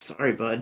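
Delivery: soft, low mutter under the breath. Shooting a bleeding enemy in a game, muttering under breath. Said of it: "Just under my breath".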